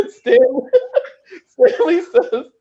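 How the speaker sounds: high, slow speech while laughing.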